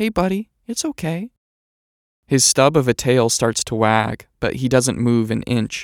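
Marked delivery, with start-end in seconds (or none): 0.0-1.3 bright, cheerful, light, happy voice, pitched up. The narrator speaks to a small dog across a shared yard: light, happy voice. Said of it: "I say in a light, happy voice".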